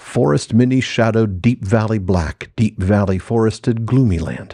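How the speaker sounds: ordinary talk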